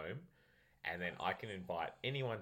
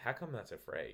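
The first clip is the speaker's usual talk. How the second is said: mild, calm, easy-going, genuinely puzzled tone; 3 semitones higher than usual. Telling a story about questioning the umpire over a free: retelling a calm question. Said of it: "like I wasn't angry or anything".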